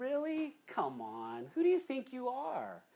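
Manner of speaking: mock scornful, sarcastic, sing-song jeering tone. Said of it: "picture this kind of mocking, sarcastic tone".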